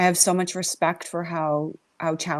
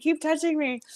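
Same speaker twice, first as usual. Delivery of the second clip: yelled, high-pitched scream; 10 semitones higher than usual. Retelling a line from a show done together: imitating own screaming. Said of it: "I was screaming".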